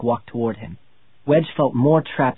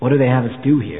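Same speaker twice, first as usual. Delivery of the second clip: plain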